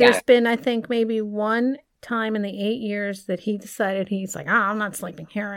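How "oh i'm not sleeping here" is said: acted-out put-out, in-a-huff, huffy tone. Retelling a partner storming off to sleep elsewhere: imitating her husband's huffy voice. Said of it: "did I make that voice?".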